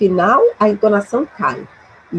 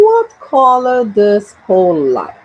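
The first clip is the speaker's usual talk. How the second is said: downward tune, pitch falling on final like; 3 dB louder than usual. Teaching intonation of information questions, falling pitch at question end. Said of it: "it goes down".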